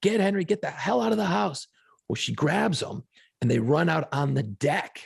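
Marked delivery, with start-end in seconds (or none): 0.0-1.7 play-acted high, urgent scream. Retelling a kitchen fire, imitating screaming to his wife. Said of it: "I'm screaming to my wife".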